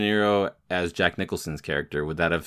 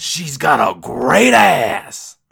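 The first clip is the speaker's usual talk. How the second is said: very loud, slow, high, drawn-out rasping yell; 9 semitones higher, 11 dB louder than usual. Showing another speaker how to do the Heat line impression. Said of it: "that was actually really good".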